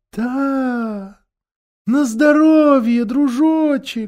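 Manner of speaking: high, slow, soothing tone with "да" drawn out. The witch answers the prince, as if soothing a child. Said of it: "произнесла колдунья так, словно ублажала ребенка".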